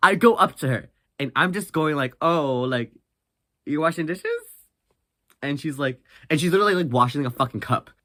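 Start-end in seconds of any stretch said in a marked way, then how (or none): 2.2-4.2 play-acted joking, playful teasing tone. Speaker retells walking up to a woman washing dishes, retelling a joking tease. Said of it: "in a very jokingly way".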